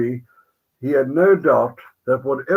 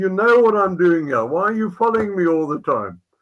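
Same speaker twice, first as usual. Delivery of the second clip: mock shouting match scream; 5 semitones higher than usual. Recounting confronting the men who kept following him: retelling a scream. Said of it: "Had a screaming match on a Sunday morning".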